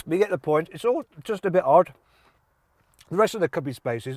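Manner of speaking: talking while chewing, mouth full of food. Speaker describing a Toyota's interior while eating; talking with mouth full. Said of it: "I've got a mouthful of food".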